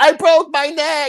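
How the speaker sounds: mock very high, stretched-out hollered cry. Retelling what an injured woman yelled to a man, imitating someone yelling. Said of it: "then she yells".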